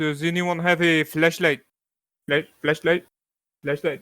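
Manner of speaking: talking with mouth full of food. Narrating a scene as a character who has just put a sandwich in his mouth: talking with sandwich in mouth. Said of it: "puts the sandwich that he was munching on in his mouth to hold it".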